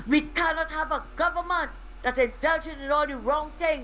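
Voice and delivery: normal talking voice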